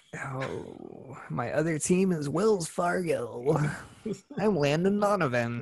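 very slow, drawn-out delivery, every word dragged out. Joking with another speaker about an ad deal: Landon Donovan impression. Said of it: "a very spot-on Landon Donovan impression".

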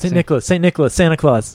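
rapid, run-together speech. Demonstrating how one name melts into another when said really fast. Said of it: "if you say St. Nicholas really fast".

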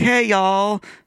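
put-on very high-pitched, heavy country accent. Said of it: "a country accent".

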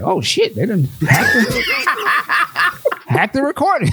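high, laughing mock panic.

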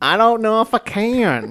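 silly put-on voice with drawn-out "can". After winning the game and being told to stop, still in a put-on voice. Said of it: "You can stop talking like that now".

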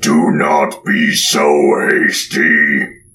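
booming, resounding voice. Voicing an unseen voice in a cave: booming voice. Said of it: "the voice booms through the cave".

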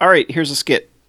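ordinary talk

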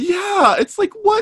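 very high, mock incredulous, exasperated squeal.

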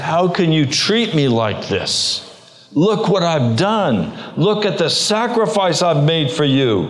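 mock angry raging outcry. Retelling answering a voice from heaven: imitating his own rage. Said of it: "And rage just rose up in my heart".

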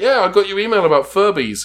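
high, loud, bad fake Australian accent. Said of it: "an American doing an Australian accent".

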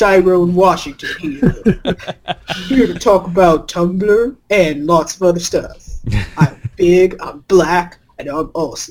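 put-on manly man voice. Reviving an old bit with a co-host, doing the Tyrone Washington man voice. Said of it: "I gotta do man voice".

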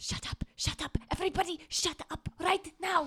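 urgent, frenzied, frantic whisper. Voicing a character hushing her companions: frantic whisper. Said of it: "frantically whispers to her companions".

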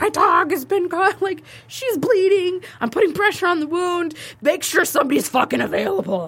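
mock high yelling. Recounting the drive to the vet with a bleeding dog; retelling a yell. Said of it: "I'm yelling at him".

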